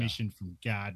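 put-on flat, heavy Chicago accent. Discussing a film, quoting Elwood's line in a flat, heavy Chicago accent. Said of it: "in the like the heavy Chicago accent".

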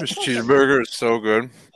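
very loud, chewing through the words, mouth full. Eating a cheeseburger mid-conversation, talking with mouth full. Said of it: "you sound like you're eating a banana".

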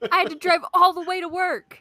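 exasperated, loud, high, put-upon annoyed griping. Friends riffing on what a man would say, imitating annoyance. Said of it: "He's annoyed".

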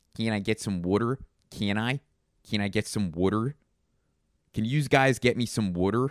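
wacky, cartoonish, over-the-top Philadelphia street accent. Speaker demonstrates the wacky northeastern accent: Philly accent. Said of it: "the Philly accent".

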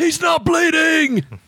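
very high, loud military shout at full lung. A player's character screams out to the major: screaming in soldierly voice. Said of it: "I scream as loud as I can in my soldierly voice".

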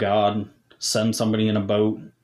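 ordinary delivery

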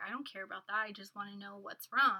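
ordinary delivery

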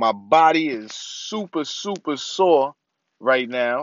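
punchy, forceful, aggressive, combative delivery. Speaker talking after getting home late from the family, sounding aggressive. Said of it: "I don't know why I sound so aggressive".

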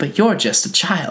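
put-on old-fashioned genteel Southern accent, laid on. Recapping a show scene, imitating Ma Dickinson's old Southern accent. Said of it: "Is it like an old Southern accent?".

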